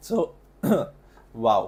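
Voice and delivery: voice breaking mid-word. Starting a home decor workshop, the speaker's voice cracking. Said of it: "voice crack".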